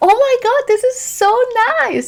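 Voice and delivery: very high, super over-the-top gushing delight. Showing parents how to praise their kids, super over-the-top praise. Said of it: "Just like be super over the top".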